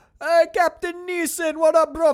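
put-on Armenian gangster accent. Retelling an officer coming back to greet his captain, vague Armenian gangster accent. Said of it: "I'm not even sure what accent this is".

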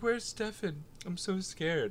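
put-on tiny, high, babyish voice. Mocking how she sounded right before the kissing part, imitating a little baby voice. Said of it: "She sounds like a little baby".

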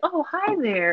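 soothing high voice. Showing how Mr. Rogers talks while he ties his shoe, do a soothing Mr. Rogers voice. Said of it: "His voice is so soothing".

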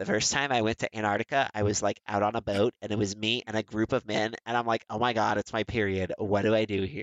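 put-on full Valley Girl California accent. Quoting a woman on a boat in Antarctica with men, Valley Girl California accent. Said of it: "The Valley Girl California accent was perfect".

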